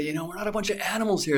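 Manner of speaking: play-acted frantic outburst. Retelling arguing with a store manager over a rule: retelling own angry outburst. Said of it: "And I just went nuts and said".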